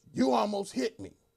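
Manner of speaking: piercing, very loud, shrill shout. Retelling how an officer ran up to the car window: imitating an officer shouting. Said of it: "he shouts".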